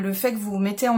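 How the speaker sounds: talking too fast, words rushed and tumbling.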